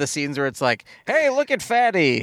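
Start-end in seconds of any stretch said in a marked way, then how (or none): 1.1-2.2 put-on high, old-time nineteen forties movie voice. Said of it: "in some sort of old school nineteen forties way".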